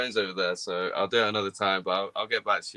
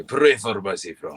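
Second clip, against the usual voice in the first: fake Spanish accent, laid on; 3 dB louder than usual. Suggesting a better accent: put-on Spanish accent. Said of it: "much better with a, a Spanish accent".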